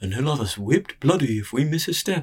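words mumbled while yawning. Narrator voicing a male servant sitting at a table, yawning, mumbled. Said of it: "yawned and mumbled".

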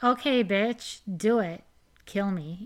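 mock joking teasing tone. Telling a story, quoting one of the girls jokingly daring the board. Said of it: "Rachel jokingly was like".

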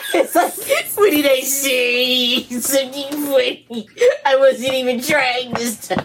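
giggling through drawn-out words. Answering why they are laughing, laughing while talking. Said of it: "Why are you laughing at me?".

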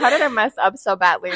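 ordinary talk, nothing marked

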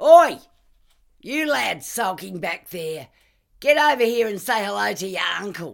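very loud, high, hollered yell. Narrator reads a man calling to the lads hanging back, yelling.

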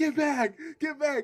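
put-on play-acted shrill, piercing, very high child's scream. Retelling how a kid in class screamed at the teachers: imitating a screaming kid. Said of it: "this kid is literally screaming".

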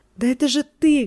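yelling, crying out. A man shouting at Gluckman in Yiddish, shouting. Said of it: "кричал Шенбаун на идише".

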